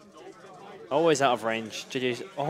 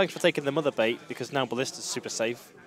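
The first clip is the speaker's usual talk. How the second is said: ordinary talk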